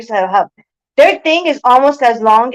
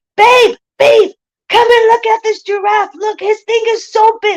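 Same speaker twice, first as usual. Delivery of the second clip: play-acted thrilled scream, very high; 11 semitones higher than usual. Retelling calling her husband over to see a giraffe, imitating herself screaming excitedly. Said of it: "I'm just screaming out loud".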